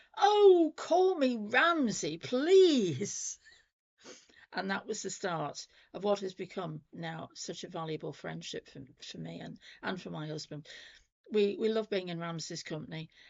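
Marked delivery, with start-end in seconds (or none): 0.2-3.4 very loud, very slow, drawn-out booming voice. Act out a man answering someone who called him Mister Campbell, in a booming voice. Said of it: "this voice booms out".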